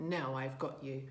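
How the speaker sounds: low, slow, drawn-out growl. A man pins the buck to the ground and growls at it. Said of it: "he growled".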